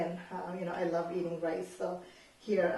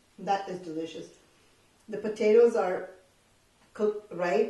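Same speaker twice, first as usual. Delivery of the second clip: talking with mouth full of food, louder; 7 dB louder than usual. Tasting the curry just cooked, talking with mouth full. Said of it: "My mouth full".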